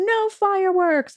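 high, slow mock toddler scream. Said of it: "she would scream out".

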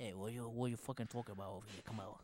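low, muttered, hard New Jersey gangster accent. Taking turns doing voices with friends, the speaker does a Tony Soprano impression. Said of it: "Tony Soprano".

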